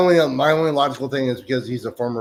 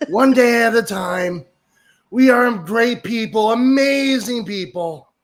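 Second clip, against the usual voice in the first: very slow, very high, loud, drawn-out drawl; 11 semitones higher, 5 dB louder than usual. Imagining being the president all day: Trump impersonation. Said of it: "just being Trump all day".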